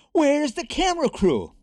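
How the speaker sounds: shrill, very high, loud screamed call. Mr. rene, clapping his hands once more on the stage, screamed. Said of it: "Rene screamed".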